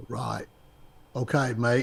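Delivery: convincing put-on Australian accent. Wrapping up with Eric, speaking in an Australian accent. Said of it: "best Australian accent I've ever heard".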